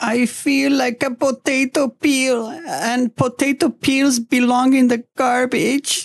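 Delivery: acted, very high, tearful whimpering whine. Recalling their mom finding them in a garbage bin, retelling a whimper.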